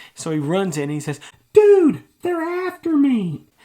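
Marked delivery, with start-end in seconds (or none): 1.5-3.4 very high-pitched, very loud, excited cry. Telling a story, quoting Carl who talks high when excited: high-pitched. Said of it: "he talks in a high-pitched voice".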